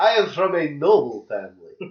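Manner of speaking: fake Transylvanian, eastern European accent. Player voices a character the others hear as from Transylvania: Transylvanian accent. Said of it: "guy's clearly from Transylvania".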